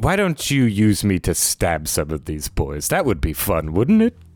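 swooping, sing-song voice, pitch swinging up and down. Voicing a sword that speaks to her sibling: Audrey voice. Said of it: "the familiar voice of your sister Audrey".

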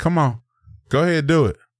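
high-pitched, bored, humoring tone. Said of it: "looking at the little kid like".

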